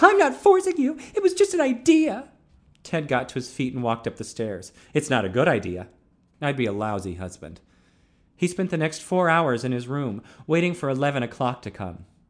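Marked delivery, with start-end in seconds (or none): 0.0-2.3 brittle, very high-pitched voice, raised. Moving away from him after he refuses to marry, she answers: high-pitched and brittle. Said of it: "Her voice was high-pitched and brittle".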